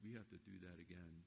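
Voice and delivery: acted whispering. Speaker retells what the patient whispered to him, retelling a whisper.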